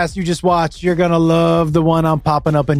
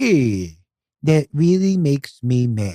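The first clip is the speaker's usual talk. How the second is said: very slow cartoon dog drawl, every word dragged out; 3 semitones lower than usual. Showing the Droopy Dog impression after being called only good at it: Droopy Dog voice. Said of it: "you're only good at Droopy Dog".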